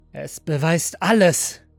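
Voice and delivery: hissing. The android, holding a pistol, replies to the master, hissing. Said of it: "Zischte der Android".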